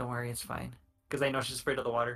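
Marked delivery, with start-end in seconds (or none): 0.0-0.7 hushed, soft, calming, reassuring half-whisper. Reassuring a companion in character: half-whispering. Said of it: "I whisper to Valerie".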